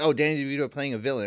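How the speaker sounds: ordinary talk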